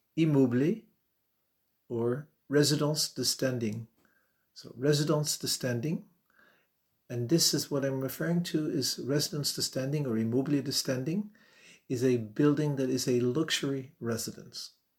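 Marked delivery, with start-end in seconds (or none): 0.2-3.9 careful, best-effort French pronunciation and accent. Showing listeners how to say a French real estate phrase: best French accent. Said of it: "with my best French accent pronunciation".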